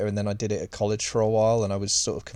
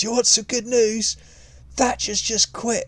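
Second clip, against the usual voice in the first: put-on very high yell at top of lungs; 13 semitones higher, 4 dB louder than usual. Retelling a deputy head's announcement in a school break room: imitating someone yelling at full volume. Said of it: "yelled out at the top of his lungs".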